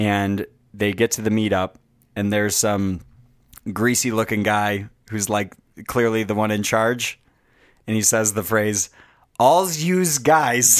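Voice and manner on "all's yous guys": put-on everyday New York accent on "yous". Describing the guy in charge of a Foot Clan meetup, the speaker quotes him in a typical New York accent. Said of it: "Like a typical New Yorker".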